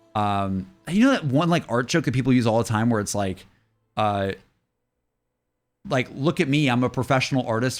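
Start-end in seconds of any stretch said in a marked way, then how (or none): none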